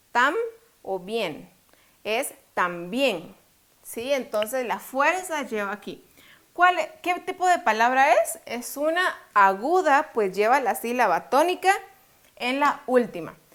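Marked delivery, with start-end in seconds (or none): 2.0-3.3 también said slowly, stress on bién. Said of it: "Cuál de estas dos es la sílaba tónica".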